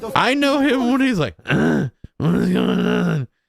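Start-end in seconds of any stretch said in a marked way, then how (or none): 1.4-3.3 rough, raspy, creaky, gruff put-on voice. Mimicking how an acquaintance talks: imitating someone's gruff put-on voice. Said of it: "makes his voice act like this".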